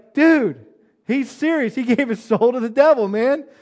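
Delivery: high, loud stunned exclamation. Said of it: "I'm like".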